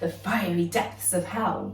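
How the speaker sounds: usual speaking voice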